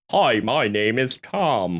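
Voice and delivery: newscaster voice with evening news presenter delivery. Trying out different voices in conversation, doing a newscaster accent. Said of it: "We got the newscaster accent".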